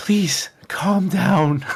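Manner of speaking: high, hushed whisper.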